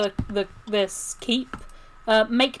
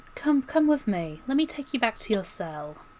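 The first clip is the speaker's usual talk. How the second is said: coaxing character voice; 4 dB quieter than usual. Voicing Lady Frostwatcher leading a player back to a cell: Lady Frostwatcher voice. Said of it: "and she's like".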